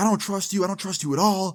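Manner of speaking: furious, high-pitched angry yelling. Retelling a girlfriend's outburst in a changing room: imitating a girlfriend yelling angrily. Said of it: "yelling at me in the changing room".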